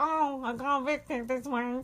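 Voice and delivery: stuffy, congested, blocked-up nose voice. Imitating an evicted housemate announcing her eviction: imitating Nedda's blocked-up nose voice. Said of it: "she sounds permanently like she's got a blocked up nose".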